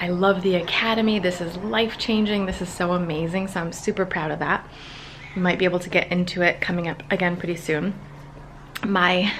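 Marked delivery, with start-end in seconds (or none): none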